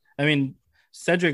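normal talking voice

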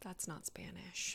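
quiet, slow whispering.

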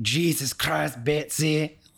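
put-on very thick Scottish accent, exasperated and fed up. Quoting a favorite line from a Scottish father: imitating Ed's super Scottish accent. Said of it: "his super Scottish accent".

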